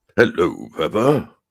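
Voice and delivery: big, loud cartoon dad voice. Claiming a very good impression, the speaker does a Daddy Pig voice. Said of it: "I also do a very good impression of Daddy Pig".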